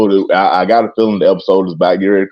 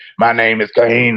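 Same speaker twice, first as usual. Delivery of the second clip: put-on voice-box voice, pitched higher; 3 semitones higher than usual. Retelling a dad's joke of imitating Kane: Kane voice-box voice. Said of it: "He would come through and be like".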